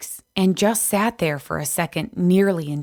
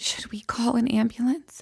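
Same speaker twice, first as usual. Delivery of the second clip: faint, barely audible, high whisper; 6 semitones higher, 4 dB quieter than usual. Reading a story, a character asks about calling an ambulance: barely audible whisper. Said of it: "In a barely audible whisper".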